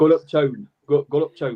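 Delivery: attempted Bolton accent. Trying to sound like locals after being asked what accent: attempted Bolton accent. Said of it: "I'm trying".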